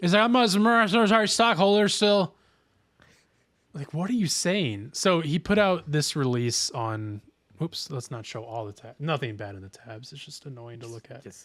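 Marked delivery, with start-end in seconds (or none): 0.2-2.3 high, mock slurred babble, words mushed together. Retelling what he said in a clip: imitating slurred speech. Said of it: "he's so slurry in this clip".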